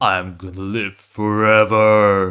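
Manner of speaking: very slow, deep put-on voice, stretched out. Imagining how an embodiment of terror would sound, in a deep put-on voice. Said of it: "my deep voice is not like great".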